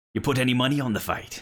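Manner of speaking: seafaring pirate character voice. Voicing a sun-weathered man greeting a player: piratey voice. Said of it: "even in the tone of his voice".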